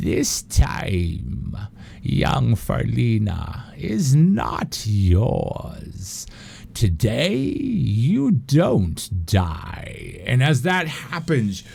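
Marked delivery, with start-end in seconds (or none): 0.0-10.2 slow, creaky, rough, swooping grandmotherly voice. Voicing an unseen figure speaking into a hero's ears: granny-like voice. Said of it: "you hear a granny-like voice in your ears".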